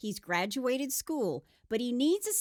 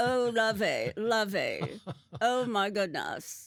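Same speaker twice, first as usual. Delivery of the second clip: put-on mid-Atlantic accent spoken through a locked jaw; 3 semitones lower than usual. Describing a man who switched to a lockjaw accent, the speaker does a Thurston Howell the Third impression. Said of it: "mid Atlantic, blue blood, lockjaw tone".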